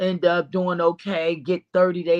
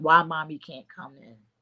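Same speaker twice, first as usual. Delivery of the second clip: put-on tearful, crying child's voice. Retelling how their kids reacted when mommy couldn't come in, imitating a crying child. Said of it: "my kids is crying like".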